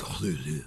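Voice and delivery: low, rough, raspy, gravelly voice. Suggesting how to pronounce a name: gravelly voice on Cthulhu. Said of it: "a little bit more of like a gravelly, like".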